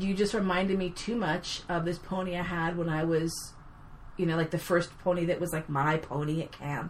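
normal talking voice

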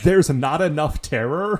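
normal talking voice

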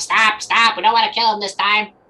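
high, loud wizard shout, voice very high. Voicing the wizard during a game scene: wizard shouting. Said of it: "you see the wizard shout".

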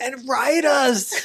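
desperate yearning voice, high-pitched and slow.

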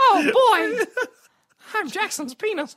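squeaky voice pitched way up high. Joking with friends, giving someone a voice in a Mickey Mouse voice. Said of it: "sounds like Mickey Mouse".

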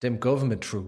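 put-on South African accent. Mocking an actor's film accent: Leonardo DiCaprio Blood Diamond accent. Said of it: "listening to him do that accent".

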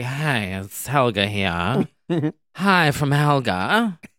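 acted, slow, super tired, worn-out, drained drawl. Describing Helga's TikToks, the speaker imitates her super tired greeting. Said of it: "one where she's like super tired".

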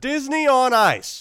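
extra loud, very high-pitched, shrill voice. Repeating the event name after being told: speaking extra loud. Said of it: "You're being extra loud".

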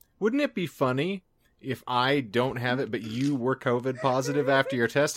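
ordinary talk

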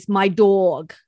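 put-on New York accent. Retelling what Dana always says, in an imitated New York accent. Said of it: "has a really good imitation of a New York accent".

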